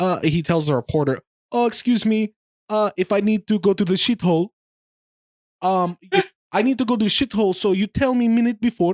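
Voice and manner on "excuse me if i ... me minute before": put-on Kazakhstani-accented broken English. Retelling what a man told a reporter about going before the show, in a Kazakhstani accent. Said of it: "a Kazakhstani accent, which he does way better".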